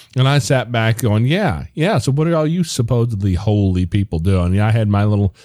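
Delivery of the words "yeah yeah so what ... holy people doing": holier-than-thou, smug, self-righteous, judgmental tone. Retelling own reaction to a foster care statistic: retelling own self-righteous remark. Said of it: "my little self-righteous moment there".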